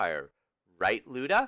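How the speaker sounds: plain reading voice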